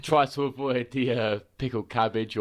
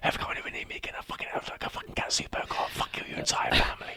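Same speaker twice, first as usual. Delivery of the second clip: put-on menacing whisper, quieter. Retelling a server whispering in a passed-out friend's ear: imitating a whispered threat. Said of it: "whispering in his ear".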